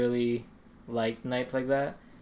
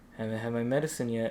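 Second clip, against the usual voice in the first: soft, drowsy, barely awake, half-asleep mumble; 5 dB quieter than usual. Retelling answering their dad who found them sitting there; imitating a half-asleep voice. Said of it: "in like a half asleep voice".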